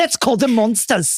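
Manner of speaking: put-on Australian accent. Imagining the ex-wife of Hugh Jackman saying a line: Australian accent. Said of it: "That was my Australian accent".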